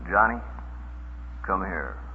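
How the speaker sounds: low, quiet, soft-spoken, hostile tone. Showing how parents call their child over once told to stay calm, in a quiet voice. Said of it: "you shouldn't be yelling at them".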